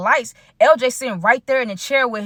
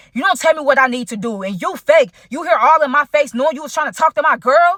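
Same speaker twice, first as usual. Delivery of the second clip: mock aggressive speech; 4 semitones higher than usual. Retelling an argument, the speaker quotes the other man's reply: retelling aggressive speech. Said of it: "he was speaking so aggressive".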